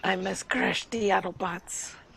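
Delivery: breathy, whispered character voice. Talking like Skywarp after offering to do it: Skywarp voice. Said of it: "You want me to talk like Skywarp?".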